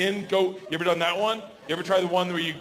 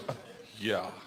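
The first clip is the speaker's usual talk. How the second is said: mock scoffing, lower and quieter; 9 semitones lower, 10 dB quieter than usual. Retelling an audience member's reply to a question: imitating a scoffing woman. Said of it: "she scoffs at me, like, rolls her eyes".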